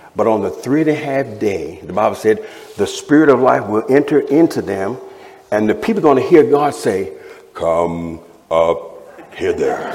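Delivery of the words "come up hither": much lower, slower grand epic movie voice. Explaining a Bible passage, voicing God's call to the witnesses in a Moses voice. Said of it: "That's my Moses voice from the Ten Commandments".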